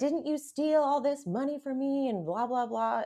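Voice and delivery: mock angry, accusing outburst, high, yelling. Retelling a reunion where she confronts a scam artist calling in: imitating Amber yelling. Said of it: "she's yelling at him".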